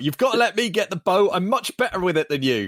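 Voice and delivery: high, put-on child's voice yelling. A father quoting his kid while they play Fortnite, imitating a kid yelling. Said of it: "my kid yelling at me about".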